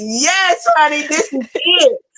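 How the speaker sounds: put-on very slow, high, stretched-out thrilled cheer. Retelling watching an interview on the phone: retelling own screaming. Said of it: "I was screaming, baby".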